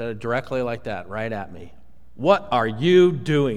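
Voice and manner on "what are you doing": put-on stern voice, slower. Retelling exactly what a clerk said to him, imitating a stern voice. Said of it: "In a stern voice".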